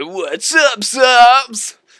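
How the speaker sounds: high, goofy put-on voice, subs stretched out. Speaker demonstrates the channel greeting in a stupid channel-intro voice. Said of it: "how they hate the stupid voice".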